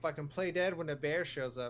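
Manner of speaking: ordinary talk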